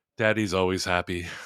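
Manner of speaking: mock-sad voice. Acting out a disappointed dad answering his wife, retelling a sad reply. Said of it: "he just sadly goes".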